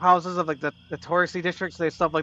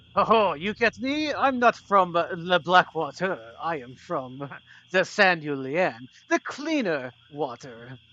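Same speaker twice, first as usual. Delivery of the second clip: exaggerated French accent. Playing a villain boasting about where he comes from; stereotypical french accent. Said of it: "but with a stereotypical French laugh".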